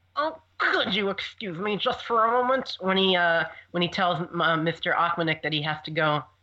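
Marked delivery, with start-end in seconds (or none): 0.2-2.8 polite, acted character voice. Doing an impression of Willy asking to be excused, rated by others: Willy imitation. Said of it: "Willy imitations".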